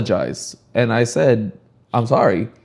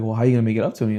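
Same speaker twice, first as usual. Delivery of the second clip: imitated, mock flirty delivery. Retelling what a woman said after he threw out her chips: imitating a flirty tone. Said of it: "she's kinda said it in a flirty tone".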